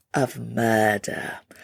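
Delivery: put-on British accent, whispered.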